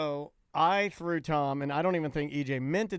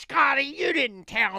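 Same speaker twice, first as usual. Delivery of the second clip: put-on voice, higher and louder; 10 semitones higher, 5 dB louder than usual. Imagining how a sweet guest might react when her name is called wrong: impression of Joy getting mad. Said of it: "This is my impression of Joy".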